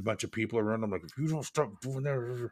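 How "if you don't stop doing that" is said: quiet, stern dad voice. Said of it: "in my dad voice, like I'm talking to my kids".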